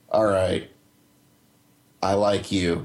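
put-on slow, expressionless, unimpressed deadpan delivery. Retelling a game character's reply to the player, imitating a deadpan line. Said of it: "said with just a dead face, straight face".

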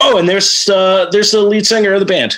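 mock casual, offhand tone. Retelling what a tour manager said: imitating a nonchalant tone. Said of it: "just very nonchalantly he's like".

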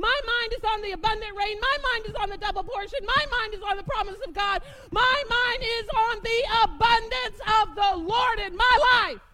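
shouting. Speaking to the audience today, yelling. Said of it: "Sorry I'm yelling at you today".

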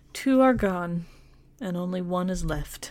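very sad, sorrowful, mournful tone. Telling a story, quoting a lady's parting words, retelling them in sad tones. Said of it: "she says in very sad tones".

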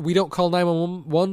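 ordinary delivery

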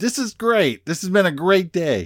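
put-on sarcastic tone. Explaining how a remark about a flat tire reads, mock-sarcastic. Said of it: "okay, that's sarcasm".

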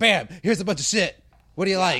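loud, hasty, rattled-off throwaway blurt. Mocking how shows get pumped out: imitating Ryan Murphy rushing. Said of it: "Very rushed".

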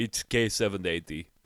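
put-on Russian accent. Joking that keyboard code names sound military: Malkovich Russian accent impression. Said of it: "I've got Malkovich's Russian accent in my head".

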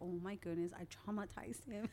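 ordinary delivery

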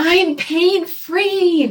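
very high, loud bellow, "free" drawn out. Retelling how a woman jumped to her feet after the gavel came down: retelling a loud bellow. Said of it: "she bellowed in a loud voice".

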